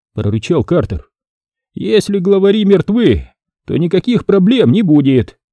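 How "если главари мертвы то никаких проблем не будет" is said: self-assured, certain, confident voice, pitched up. Narrator reads Mitchell answering Carter, confident. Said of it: "уверенно заявил Митчелл".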